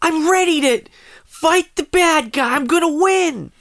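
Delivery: anime-style heroic character voice. Asked to do their best anime voice, the speaker answers in an anime voice. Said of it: "Do your best anime voice!".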